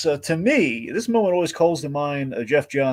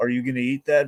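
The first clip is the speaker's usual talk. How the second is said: normal talking voice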